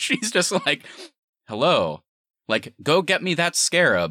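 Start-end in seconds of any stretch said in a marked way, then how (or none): 1.5-4.1 drawn-out, robotic, machine-like delivery. Mock her worst performance ever in this movie with a robotic Susan Sarandon impression. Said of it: "Susan Sarandon was more robotic".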